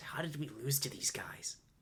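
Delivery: bewildered, baffled stage whisper. Voicing a character who leans over to another: whispering. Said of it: "she leans over and whispers".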